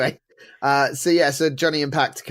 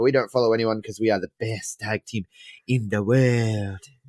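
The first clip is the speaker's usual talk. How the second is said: put-on Mexican accent, lower; 5 semitones lower than usual. Retelling what the tag team said backstage: Nacho Libre voice. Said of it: "That was my Nacho Libre impression".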